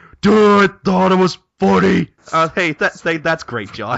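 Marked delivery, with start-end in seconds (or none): 0.2-2.1 booming, rough, high, creaky puppet voice, very loud. Joking that a puppet replaces the co-host, answering as it: puppet version of John. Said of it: "replace you with a puppet".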